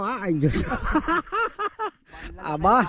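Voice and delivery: amazed, high-pitched, laughing exclamation.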